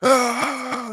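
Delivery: very high, loud, raw scream at full lungs.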